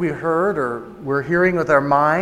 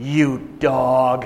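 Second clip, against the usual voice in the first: put-on powerful old man voice, lower pitch; 3 semitones lower than usual. Retelling what a spirit said through a girl: imitating a powerful old man's voice. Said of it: "sounded like a really, really old man with a real great deal of power".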